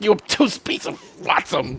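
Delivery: near-whispered, breathy, all in one breath. Discussing a favorite line, imitating how Q says it; breathless Q impression. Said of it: "he gets it out breathlessly".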